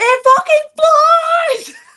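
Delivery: shrieking, very high-pitched, loud scream. Retelling how everyone reacted to a flying cockroach: retelling a scream. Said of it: "We're screaming".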